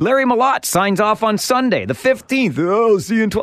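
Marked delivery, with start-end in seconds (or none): 2.6-3.4 bad, terrible broadcaster announcer voice. Retelling how another broadcaster signed off: terrible impression of Larry Malott. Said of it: "That's a terrible impression of Cooney and Malott".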